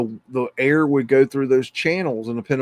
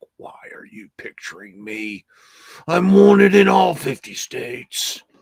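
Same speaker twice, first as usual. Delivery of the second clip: mock slow, rough, irritated, put-out grumble; 4 semitones higher, 4 dB louder than usual. Putting words in the mouth of a guy nearby: imitating a pissed-off guy. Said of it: "this guy's pissed. He's like".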